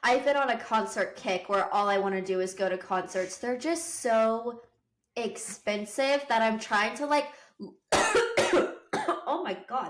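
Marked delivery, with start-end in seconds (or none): 7.9-9.9 high voice choking on spit mid-line. Breaking off mid-sentence about concerts: choking on spit. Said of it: "I just choked on my own spit".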